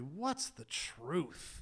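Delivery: soft, smug, dismissive tone. Retelling Pilate's reply to Jesus, mock-smug. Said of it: "he says so smugly".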